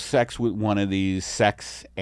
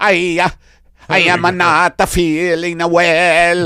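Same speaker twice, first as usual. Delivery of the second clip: fake put-on Italian accent, higher and louder; 8 semitones higher, 8 dB louder than usual. Redoing a skit line after correcting: put-on Italian accent. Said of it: "I'm not doing the Italian accent".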